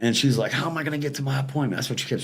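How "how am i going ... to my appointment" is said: put-on hysterical woman voice, quieter. Retelling what a man's wife kept saying, imitating a hysterical woman. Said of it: "they're very hysterical".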